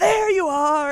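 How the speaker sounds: sudden, high, shouted outburst. Retelling a scene where the character jumps up on the table: imitating the movie's lead character shouting. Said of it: "I love when he jumps up on the table".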